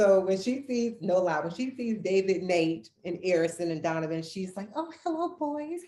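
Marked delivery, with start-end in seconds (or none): 4.8-5.8 very high, all-innocent sweetness. Imitating the speaker's mother greeting the boys, in a mock-innocent tone. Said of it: "she just all innocent acting".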